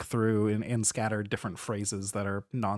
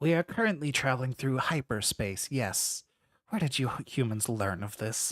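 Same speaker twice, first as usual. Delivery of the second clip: crackling ship-wide intercom voice; 3 semitones higher than usual. The ship's voice answers a human who spoke up, in a crackling ship-wide voice. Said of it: "What are you doing on my ship, / Despicable. / It's crackling over the whole ship".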